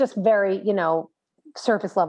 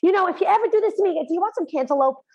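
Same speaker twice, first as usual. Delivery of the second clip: put-on very high, shrill, scolding shout; 10 semitones higher than usual. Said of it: "she's shouting at them".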